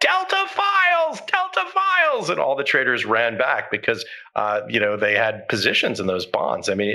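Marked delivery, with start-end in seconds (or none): 0.0-2.3 increasingly shrill voice, much higher, slower. Retelling a trader on the desk calling out, in an increasingly shrill tone. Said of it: "in an increasingly shrill tone".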